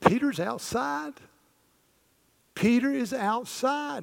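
thrilled, deliberate, very high, drawn-out excited delivery. Retelling a servant girl running back to the prayer group: imitating an excited servant girl. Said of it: "she gets so excited".

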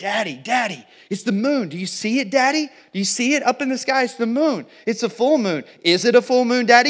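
put-on excited child scream. Retelling a daughter on the beach who loses her mind at the moon: imitating Lanier screaming excitedly.

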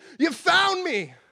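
very high, shrill, screamed cry. Retelling how a stranger reacted to the clues: imitating a woman screaming. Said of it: "And she screamed at me".

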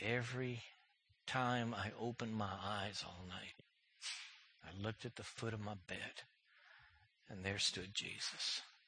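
weak, frail, low, very soft dying voice.

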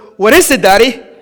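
usual speaking voice

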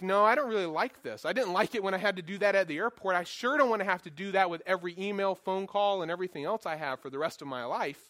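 normal talking voice

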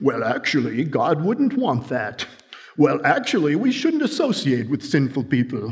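pedantic, know-it-all voice. Acting out religious leaders' 'well, actually' objections, in a Thurston Howell III voice. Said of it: "It's a little bit like Thurston Howell III".

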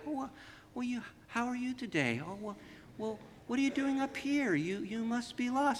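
soft, sweet voice. Retelling how the neighbor Lisa talks to a lost sheep, imitating Lisa's soft sweet talk. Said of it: "starts talking to it very softly, very sweet".

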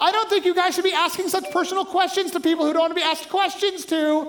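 mock agitated, high-pitched, worked-up yell. Speaker recounts a woman behind her car addressing a camera crew, retelling her yelling. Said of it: "she's yelling at them".

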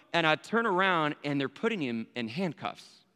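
usual speaking voice

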